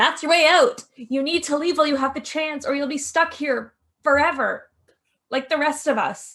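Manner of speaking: concerned, slightly frantic, high-pitched voice. Narrating a scene, voicing a character who appears right behind you, concerned and a bit frantic. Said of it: "she looks concerned and a bit frantic".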